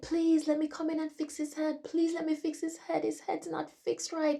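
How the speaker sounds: mock very high, loud, tearful crying voice. Retelling a dream of begging to fix the body: retelling own crying plea. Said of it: "And I'm crying".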